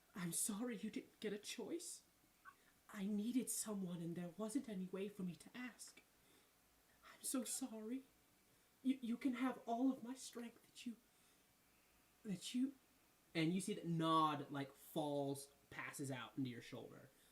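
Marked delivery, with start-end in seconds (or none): 0.2-12.7 put-on soft, wheezy half-whisper, very close-up. Voicing a wheezing character who half-whispers into a player's ear: half-whispering while wheezing. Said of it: "they whisper in your ear".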